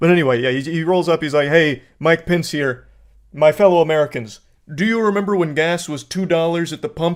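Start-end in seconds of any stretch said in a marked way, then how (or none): 1.5-7.2 put-on joyless, sad, downtrodden, unenthusiastic voice. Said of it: "he sounded just downtrodden".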